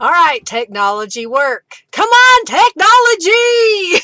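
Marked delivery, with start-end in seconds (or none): 1.9-4.0 very high-pitched, shrill, loud yell. Technology fails to work at the start of the session with everybody, yelling. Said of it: "I didn't mean to yell at y'all".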